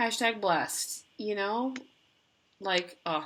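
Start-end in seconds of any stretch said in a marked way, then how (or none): 0.0-1.7 slow, sarcastic drawl. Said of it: "that sounded so sarcastic".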